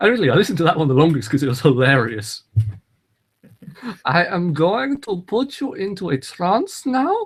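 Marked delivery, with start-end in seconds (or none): 4.0-7.3 put-on high, slow, drawn-out creepy voice in German accent. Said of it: "creepy German voice".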